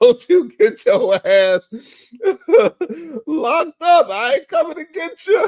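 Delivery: laughing, high and loud.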